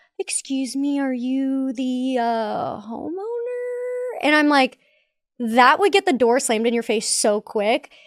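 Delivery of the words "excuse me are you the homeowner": pretending to be confused, quieter. Retelling a sales trainer's door-knocking tip, mock confused. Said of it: "and you look confused".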